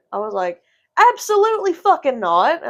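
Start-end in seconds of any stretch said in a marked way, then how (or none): 1.1-2.6 loud, outraged, furious swooping yell. Retelling confronting a patient who grabbed her in the ER: retelling her own furious yell. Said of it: "I'm, like, yelling".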